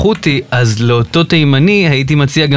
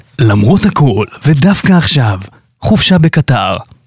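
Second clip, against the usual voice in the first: slow, put-on radio announcer delivery. Asked for a more radio voice, doing a radio voice. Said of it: "אני יכול לעשות קול רדיופוני".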